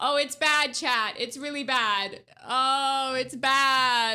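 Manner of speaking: high, uneasy, nervous laughter through the words. Streamer reacting to a post with chat, laughing uncomfortably while talking. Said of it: "I'm uncomfortable and just start laughing".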